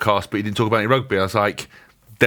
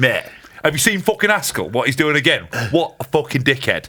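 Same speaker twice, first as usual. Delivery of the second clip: dismissive, sneering, judgmental voice; 3 semitones higher than usual. Imitating someone reading posts and insulting Haskell. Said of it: "It's quite a good impression".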